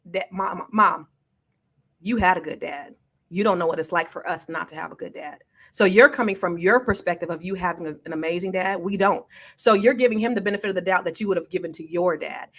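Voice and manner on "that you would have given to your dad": normal talking voice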